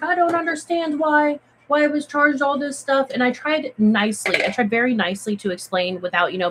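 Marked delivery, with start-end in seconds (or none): 0.0-3.1 play-acted, irate, angry, pitched-up delivery. Retelling a guest's call about a cleaning charge: imitating a mad guest. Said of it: "he was all mad".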